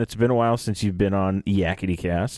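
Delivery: plain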